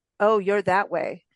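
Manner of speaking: plain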